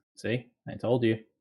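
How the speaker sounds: plain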